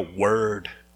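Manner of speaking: "word" said low and casual, cool-guy slang.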